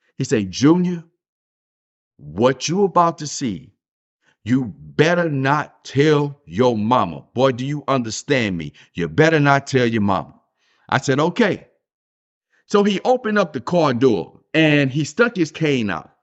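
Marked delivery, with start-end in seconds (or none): 0.5-10.4 mock strict, stern, no-nonsense tone. Retelling what his daddy told him in the car: imitating his daddy's stern warning. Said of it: "he said this so sternly".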